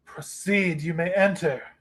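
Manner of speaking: haughty, lordly, imperious, commanding voice. Voicing a figure who calls out to the intruding party: imperious voice. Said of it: "an imperious voice calls out".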